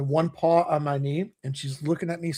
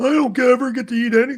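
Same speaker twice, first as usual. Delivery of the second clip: put-on pitiful begging dog voice, much higher, louder; 9 semitones higher, 9 dB louder than usual. Telling how their dog begs after getting the first bite, voicing a mock-pitiful begging dog. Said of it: "the fucking feel sorry for my eyes".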